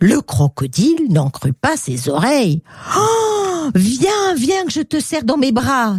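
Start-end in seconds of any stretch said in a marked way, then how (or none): 3.0-6.0 high, joyful exclamation full of delight. Croc-en-Bouche the crocodile answers Pixie's offer of a kiss, crying out joyfully. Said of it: "s'écria Croc-en-Bouche tout heureux".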